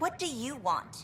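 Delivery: annoyed sharp retort. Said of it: "I'm sorry I snapped at you".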